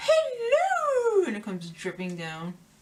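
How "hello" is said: very high, long drawn-out call. Joking about a face mask like the cake scene, doing a Mrs. Doubtfire voice. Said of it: "Either that or Missus Doubtfire".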